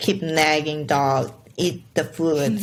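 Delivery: normal talking voice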